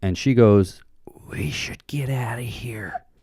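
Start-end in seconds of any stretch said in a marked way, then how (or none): 1.3-3.0 put-on very soft, slow, hushed, drawn-out drunken whisper. Retelling what a drunk girl said into his ear: imitating Becky's loud drunk whisper. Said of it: "drunk whispers into my ear".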